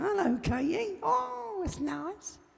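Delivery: put-on very high, very soft, creaky granny voice, hushed. Greeting Katie, the speaker attempts a granny voice: bad granny voice. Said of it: "Can't even do my granny voice properly".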